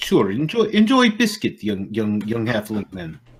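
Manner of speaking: theatrical put-on Russian accent. Speaking in character to a halfling during a game, Russian accent. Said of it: "I think I'm gonna wind up making her more Russian".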